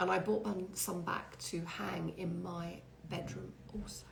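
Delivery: very quiet, hushed, secretive whisper. Speaker shows off lights brought back without telling the store team; whispering. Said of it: "I'm whispering".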